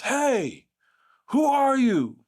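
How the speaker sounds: very high, shrill, sudden, loud, swooping call. Retelling an older professor walking into the room unannounced, retelling a loud call. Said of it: "with a loud voice".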